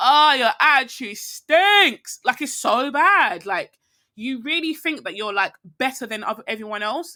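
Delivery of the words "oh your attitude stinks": high, loud, slow disgusted tone. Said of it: "I'm like".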